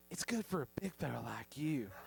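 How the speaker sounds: put-on syrupy-sweet Southern accent. Retelling what a woman said with her hand on his shoulder, imitating a sweet southern lady. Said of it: "sweet Southern lady".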